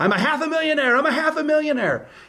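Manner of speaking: high-pitched, shrill, repeated yelling. Retelling a sister at the screen door waving a paper: imitating someone yelling. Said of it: "at the screen door yelling".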